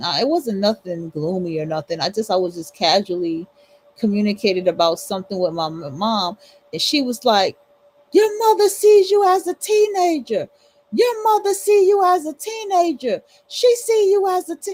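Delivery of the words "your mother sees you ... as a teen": acted, very high, shrieking, shrill yell. Retelling a woman's reply after he mentioned his mom: imitating her yelling. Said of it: "why is you yelling?".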